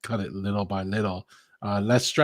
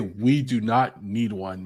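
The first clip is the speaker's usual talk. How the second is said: ordinary delivery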